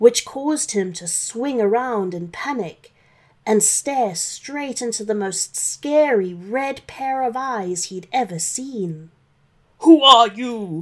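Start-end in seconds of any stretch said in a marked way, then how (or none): 9.8-10.8 very loud, roaring shout. Reading a story, the owner of the eyes confronts santa: shouted. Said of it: "shouted the owner of the eyes".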